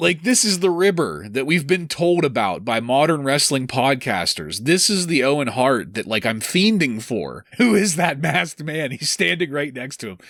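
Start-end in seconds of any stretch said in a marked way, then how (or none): 7.6-8.9 mock, pitched-up wrestler-style yell. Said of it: "Owen yelling".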